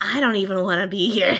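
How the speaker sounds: grumbling, half muttered, fairly loud. Voicing a character's remark in a game: muttering under breath. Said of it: "Shay just mutters under her breath".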